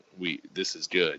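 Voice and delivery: whispering. Retelling a wrestling match, speaking to a partner mid-match: retelling a whisper. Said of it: "whispering in his ear".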